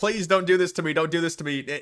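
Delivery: pleading, begging voice. Mocking a senator being arrested, retelling his plea: mock pleading as Alex Padilla. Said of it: "he's like".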